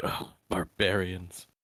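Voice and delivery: muttered under the breath. A player voicing Oberon reacting to the others, muttering under breath. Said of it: "muttering under his breath".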